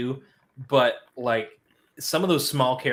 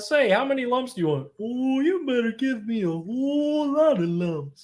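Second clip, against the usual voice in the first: very high, silly, goofy cartoon-cat voice; 13 semitones higher than usual. Recalling a favorite cartoon ending, the speaker does the Paul Puma voice. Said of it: "I knew how to do that voice".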